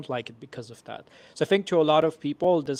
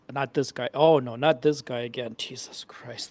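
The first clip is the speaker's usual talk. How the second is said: mock exasperated groan in put-on voice; 2 semitones lower than usual. Imitating how Mark reacts whenever this speaker talks: imitating Mark, exasperated. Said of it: "he's like".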